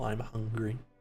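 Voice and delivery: quiet, hushed, almost whispered voice. Voicing a fire that tells a player it is hungry: quiet, almost whispered fire voice. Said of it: "The fire speaks very quietly, almost in whispered tones".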